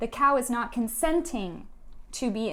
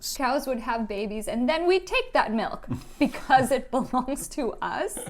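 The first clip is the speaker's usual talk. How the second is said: normal talking voice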